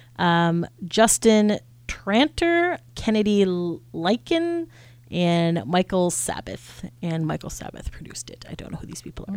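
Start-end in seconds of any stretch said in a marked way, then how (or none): 7.0-9.4 soft breathy whisper, barely audible. Listing songwriter names, then admitting not knowing them: whispering. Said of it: "Stop whispering".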